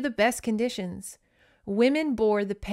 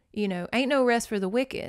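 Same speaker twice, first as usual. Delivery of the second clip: ordinary talk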